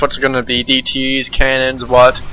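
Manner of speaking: usual speaking voice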